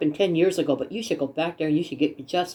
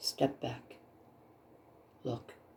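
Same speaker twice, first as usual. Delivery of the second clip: very quiet, still, small whisper; 5 semitones lower, 17 dB quieter than usual. Describing how spirit speaks, acting out its quiet urging in a still, small voice. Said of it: "a very still, small voice".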